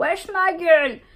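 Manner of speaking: acted-out loud, high call projected far. Retelling calling a friend across a shop: retelling her own loud call. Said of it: "je commence à faire tout fort".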